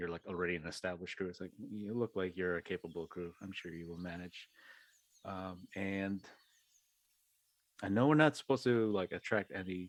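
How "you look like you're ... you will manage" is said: quiet, dropped, hushed voice. Speaking in character to a crew, not wanting others to hear: dropped voice. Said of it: "I drop my voice at this".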